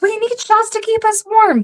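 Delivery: full-lung shout, pitched very high. Retelling yelling to a crowd, retelling yelling at top of lungs. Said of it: "At the top of my fucking lungs".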